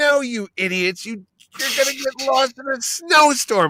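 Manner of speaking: put-on, high-pitched scream. Retelling how he reacts to a show's characters, imitating himself screaming at the TV. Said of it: "I'm screaming at the T V".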